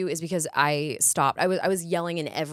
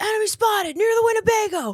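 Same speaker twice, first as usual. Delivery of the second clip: put-on scream, higher and louder; 6 dB louder than usual. Retelling a game role of a military girl: imitating a screaming soldier. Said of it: "who's just screaming".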